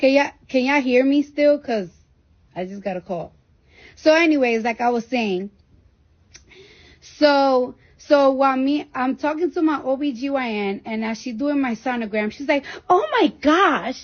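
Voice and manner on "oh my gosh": put-on surprised, exclaiming girl's voice with Staten Island accent.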